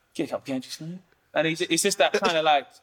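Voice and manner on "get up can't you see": put-on old geezer character voice. Performer describing his geezer character's mannerisms demonstrates the geezer character voice. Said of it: "when I'm the geezer, I'm like".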